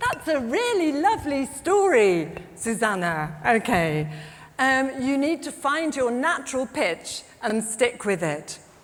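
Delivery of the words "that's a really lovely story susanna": friendly classroom teacher tone. Showing how pitch changes for being friendly, the speaker demonstrates a higher friendly pitch. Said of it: "Or a higher pitch for being friendly".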